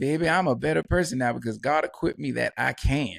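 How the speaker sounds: usual speaking voice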